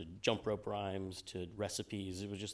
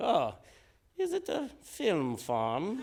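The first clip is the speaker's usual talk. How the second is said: put-on awful German accent, very high and very slow; 11 semitones higher, 7 dB louder than usual. Retelling what they asked about the farm, in a bad German accent. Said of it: "I'm gonna do my German accent. It's gonna be terrible".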